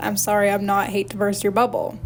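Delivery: plain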